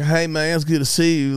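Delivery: fake Texas country drawl, put-on. Imitating an upstate New Yorker greeting with a fake country accent: imitating a fake country accent. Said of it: "That's not your accent".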